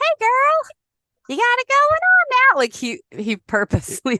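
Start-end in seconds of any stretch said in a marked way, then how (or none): 0.0-2.6 put-on very high, loud, squeaky little-kid voice. Retelling a concert moment, imitating Joey's little kid high voice. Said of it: "put his little kid high voice on".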